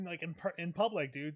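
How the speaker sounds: plain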